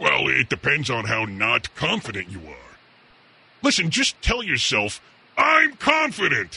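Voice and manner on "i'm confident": booming, loud declaring voice, pitched very high. Host tells a caller how to say it to themselves, in a big, loud voice. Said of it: "In a big, loud voice".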